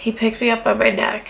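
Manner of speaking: plain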